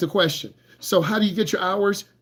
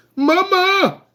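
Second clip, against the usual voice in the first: very high, loud, drawn-out, frantic, panicked wail; 13 semitones higher, 5 dB louder than usual. Describing a young driver seeing cars: imitating a panicked driver's cry. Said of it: "you panic".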